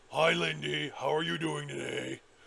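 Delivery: loud, rough, creaky, silly put-on monster voice. Recalling joking around during a scary moment, giving a creature a funny creature voice. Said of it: "we gave the creatures funny voices".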